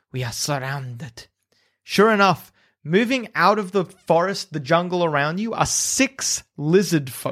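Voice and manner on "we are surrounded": low, quiet hiss, almost to oneself. Game master voices Flask of Wine, who stops the group; low hiss. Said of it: "hisses and says, low, almost to himself".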